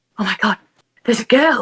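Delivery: stunned, shocked, disbelieving outburst of surprise. Retelling how people reacted to a girl at an event: imitating shocked people. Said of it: "so shocked".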